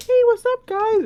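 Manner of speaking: put-on very high, little, scrawny kid voice. Describing a guy who sounded small as a kid, imitating his high-pitched scrawny voice. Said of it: "like a little scrawny voice".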